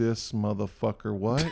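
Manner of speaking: put-on muttering under breath. Speaker retelling how a man reacts at a meal, imitating him mumbling under his breath. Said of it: "starts mumbling under his breath like".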